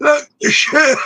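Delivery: put-on Lancashire accent, very high pitch. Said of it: "What are you from Lancashire? Talk like that".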